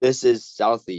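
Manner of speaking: ordinary delivery, nothing marked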